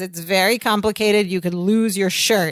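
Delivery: normal talking voice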